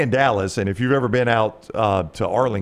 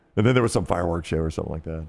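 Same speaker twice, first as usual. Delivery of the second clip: normal talking voice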